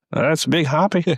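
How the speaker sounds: very high-pitched comic-book villain voice. Answering who was in the prison in a Batman Begins bit, as Ray Romano. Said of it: "You sound like a Batman villain".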